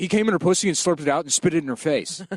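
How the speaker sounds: put-on gruff voice with quick, rapid delivery. Podcast host retells a man's story the way he told it, imitating a gruff fast talker. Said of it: "very like gruff, like he just speaks quickly".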